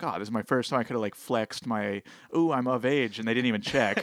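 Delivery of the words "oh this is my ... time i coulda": ordinary delivery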